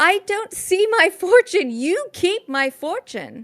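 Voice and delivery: very high-pitched shouting. In a narrated scene, she answers the previous speaker, shouting back. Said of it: "And she shouts back".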